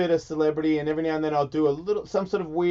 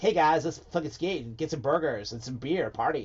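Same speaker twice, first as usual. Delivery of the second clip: put-on American accent, skateboarder type. Imitating a skateboarder named Mike McGill: put-on American accent. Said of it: "an American accent".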